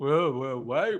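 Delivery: slow, mocking put-on voice. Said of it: "that was my impression of the voice of public opinion".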